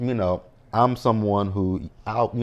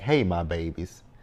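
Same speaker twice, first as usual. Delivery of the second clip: put-on sweet, condescending tone; 3 semitones lower than usual. Imitating Mo'Nique's greeting while discussing it: imitating Mo'Nique, condescending. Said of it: "when she be like".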